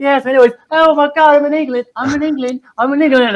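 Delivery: high, gushing, excited American tourist voice. Describing every American getting off the plane in England, imitating an arriving American. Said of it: "every American that comes there".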